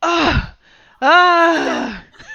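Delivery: high, loud, startled yelp.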